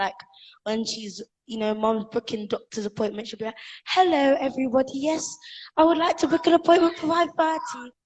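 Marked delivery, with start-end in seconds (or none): 3.9-7.8 put-on British accent, pitched up. Imitating mom booking a doctor's appointment by phone, in her British accent. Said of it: "she suddenly switched from her Jamaican accent".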